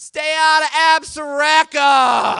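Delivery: put-on very loud holler in thick North Dakota hillbilly accent. Retelling how a girl shouted at them as they drove away, in a hillbilly accent. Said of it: "shouts at us in kind of a very North Dakota hillbilly accent".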